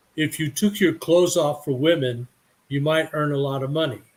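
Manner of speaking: usual speaking voice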